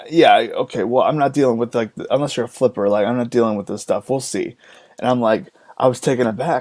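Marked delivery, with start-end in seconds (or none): none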